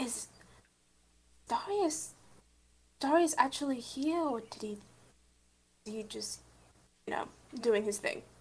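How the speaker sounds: soft, hushed whisper under the breath. In the game, a player's character whispers a question over to his brother. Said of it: "I'm gonna whis- whisper over to my brother".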